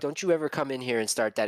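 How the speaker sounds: ordinary talk, nothing marked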